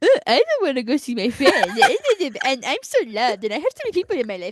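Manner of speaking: sarcastic, mocking, high sing-song voice. Retelling how she teases her mom about going out: mocking imitation of mom. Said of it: "my mom is like".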